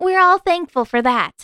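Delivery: light playful teasing. She replies to her partner: teasing. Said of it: "she teased".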